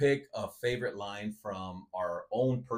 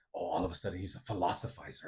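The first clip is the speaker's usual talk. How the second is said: breathy, whispered movie-character delivery; 3 semitones lower, 4 dB quieter than usual. Mocking a friend's deep quote the way a movie character would: Ben Stiller Dodgeball voice. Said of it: "Ben Stiller's, um, from Dodgeball".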